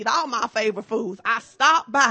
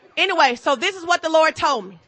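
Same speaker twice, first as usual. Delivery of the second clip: plain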